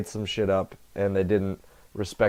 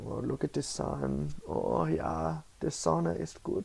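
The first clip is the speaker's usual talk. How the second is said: over-the-top put-on German accent, soft and swooping; 8 semitones higher, 8 dB quieter than usual. Speaker musing about getting along in New York breaks into an exaggerated German accent. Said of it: "that's my super German voice".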